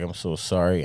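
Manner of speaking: put-on tearful crying voice. Retelling apologizing to someone who passed away: imitating own past crying. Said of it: "I'd just be crying".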